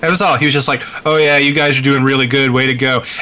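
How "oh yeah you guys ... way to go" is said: insincere, sarcastic mock enthusiasm. Retelling what a teammate said while we were playing, imitating his sarcastic tone. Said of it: "a guy that was just being sarcastic on my team".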